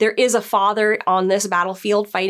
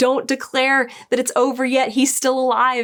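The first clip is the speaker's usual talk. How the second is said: urgent, desperate, pleading cry; 4 semitones higher than usual. Retelling the moment Egg tries to stop the contest from ending: imitating Egg's desperate scream. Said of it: "screaming to stop".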